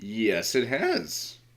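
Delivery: voice breaking. Answering your own question about whether something has updated, voice cracking. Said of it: "That was a weird voice crack".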